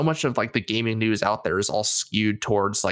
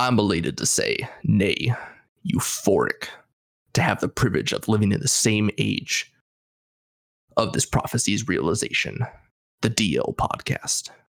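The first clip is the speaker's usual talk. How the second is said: put-on, grand broadcast announcer delivery. Introducing the DL Podcast on request, in an announcer voice. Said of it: "That was my announcer voice".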